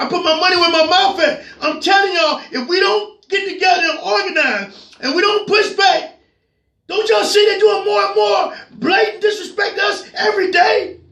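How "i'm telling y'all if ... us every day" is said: rousing, impassioned, dead-serious shouting. Urging the audience to organize and push back: yelling. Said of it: "I'm yelling because it's serious".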